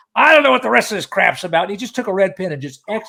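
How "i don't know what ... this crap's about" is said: put-on loud New York accent, talking around a cigar. Retelling what a hit songwriter from New York said: cigar-in-mouth New York voice. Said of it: "he sounded like he had a cigar in his mouth".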